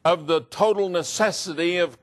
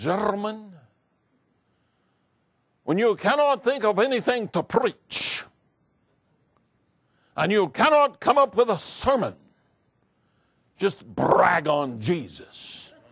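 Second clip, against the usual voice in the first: acted elderly Scottish accent. Quoting your old Bible college professor addressing his students, speak in Dr. Peter Conley's old Scottish brogue. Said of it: "in his old Scottish brogue".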